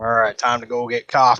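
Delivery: fake, forced, laid-on southern drawl. Joking with friends while gaming, using a put-on southern accent. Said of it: "It's my southern accent".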